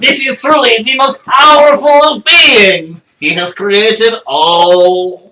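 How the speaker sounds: high, loud creature voice with all words drawn out. Joking about a journal falling into a Kuo-toa's hands, speaking in a Kuo-toa voice. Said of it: "Kuatoa voice".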